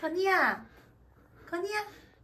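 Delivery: high, singsong, sweet calling tone.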